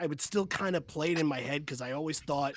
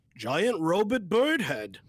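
cartoon alien voice, higher, louder; 3 semitones higher, 6 dB louder than usual. In a group game, a player tries their best Zoidberg impression. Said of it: "do my best Zoidberg impersonation".

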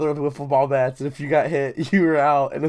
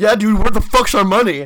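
super aggressive, confrontational, loud and pitched up; 6 semitones higher, 8 dB louder than usual. Retelling a demand for money: retelling an aggressive demand. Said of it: "I said it super aggressively".

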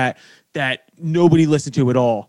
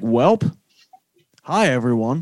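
news anchor voice, lower and slower; 3 semitones lower than usual. Recalling how they introduced the band's first podcast episode, news anchor voice. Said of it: "Talking like a news anchor voice".

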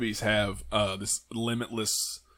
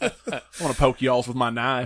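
mock hillbilly killer voice, getting louder; 2 semitones higher, 6 dB louder than usual. Joking about being a dream killer: put-on redneck killer voice. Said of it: "I'd be the redneck dream killer".

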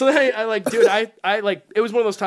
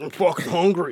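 mock drunk voice, lower pitched; 4 semitones lower than usual. Retelling coming home late at night: imitating own drunk self. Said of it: "drunk, [name], dumb, fucking idiot guy walking into the house being like".

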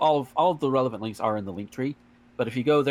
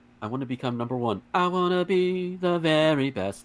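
put-on girlish game-character voice; 4 semitones higher than usual. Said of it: "[name]'s Danganronpa girl voice".

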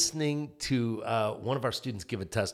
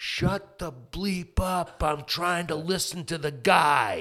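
high, mild, put-on child's yell, kept small; 6 semitones higher than usual. Retelling how a kid yelled at a noisy group: imitating a kid yelling. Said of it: "this kid yells at him".

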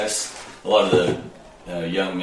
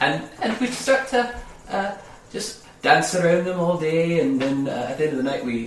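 put-on character voice, much higher pitch; 10 semitones higher than usual.

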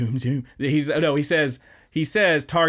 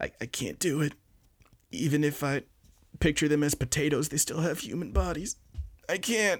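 soft terrified mumble, words barely getting out; 2 semitones higher, 7 dB quieter than usual. Retelling a scene from a show where a student is terrified: imitating a terrified mumble. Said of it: "he kinda mumbles. He's like, he can't speak. He's terrified".

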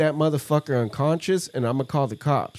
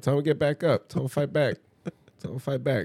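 ordinary talk

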